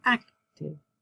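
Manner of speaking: "active" with stress on first syllable "ac". Showing learners where the stress falls in a word: stress on AC in active. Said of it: "it's on the first syllable".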